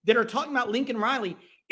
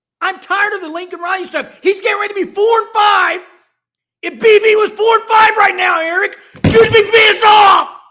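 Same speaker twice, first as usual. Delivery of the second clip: shouting, higher pitched and louder; 8 semitones higher, 13 dB louder than usual. Arguing about a coach's record with another speaker: yelling. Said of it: "I don't need to yell, Jay. You're doing it".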